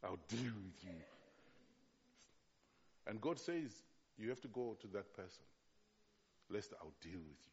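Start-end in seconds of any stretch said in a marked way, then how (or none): 0.0-1.0 low voice with heavy, strong Nigerian accent. Showing a listener how Nigerians say the phrase, in a strong Nigerian accent. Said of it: "How do they say".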